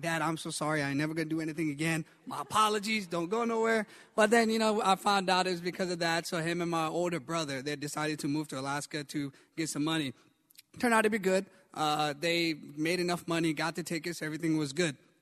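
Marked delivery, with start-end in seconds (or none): 0.0-3.9 put-on panicked, freaked-out pleading tone. Retelling begging dad not to move away: imitating own freaked-out plea. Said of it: "freaking out".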